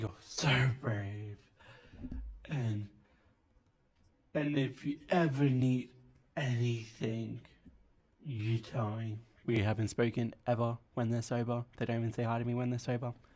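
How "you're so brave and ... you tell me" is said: put-on very slow, sloppy, drunken gushing sincerity. Doing a bit about people when drunk, imitating a drunk person. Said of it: "my impression of a drunk person".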